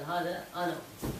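normal talking voice

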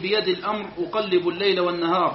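ordinary talk, nothing marked

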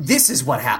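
usual speaking voice

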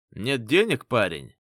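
mocking, taunting little jeering jab. Reading a story: a man pushing a cart taunts the narrator; mocking question. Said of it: "с издевкой спросил он".

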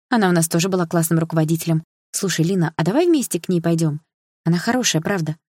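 ordinary delivery, nothing marked

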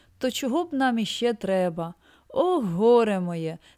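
words said with a sigh. A wandering knight replies to his companion's request, sighing. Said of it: "зітхнув Дон Кіхот".

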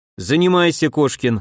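usual speaking voice

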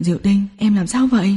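plain reading voice

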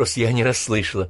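plain

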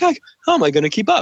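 breathless, gasping voice. Retelling a movie's walking scene, imitating someone out of breath. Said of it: "he's like all out of breath".

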